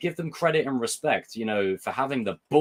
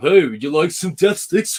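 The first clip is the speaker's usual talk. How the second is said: very loud, pitched-up, silly cartoon dog holler; 6 semitones higher, 8 dB louder than usual. Picturing the listener as Goofy calling out from the corner: Goofy voice. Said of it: "you're Goofy in the corner going".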